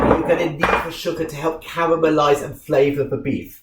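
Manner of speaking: normal talking voice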